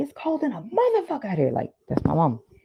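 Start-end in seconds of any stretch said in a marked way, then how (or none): 0.0-1.5 very high, shrill, swooping hollering yell. Retelling how a mother yells walking outside: imitating mother yelling. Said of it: "my mama would yell at a fucking fly".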